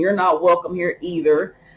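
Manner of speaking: ordinary talk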